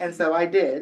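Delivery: ordinary talk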